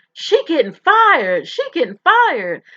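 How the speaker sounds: repeated shrill, loud, swooping screaming outburst. Retelling how someone jumped up from her desk: imitating someone screaming. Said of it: "started screaming".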